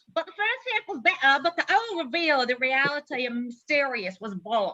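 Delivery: poorly done put-on British accent. Taking a turn at a British accent while giving an opinion, bad British accent. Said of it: "My British accent is terrible".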